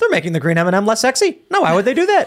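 high, swooping put-on voice. Retelling a parody sketch in [name]'s Tucker voice: Tucker Carlson voice. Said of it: "[name]'s Tucker voice".

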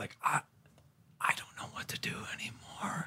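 hushed, overcome, emotional, barely above a whisper. Talking about how much more he can help a kid he knows, getting emotional. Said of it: "I'm getting emotional just thinking about it".

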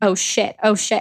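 put-on panicked, scared voice. Retelling a frightening night, thrashing around: retelling own panic. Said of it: "started going so deep".

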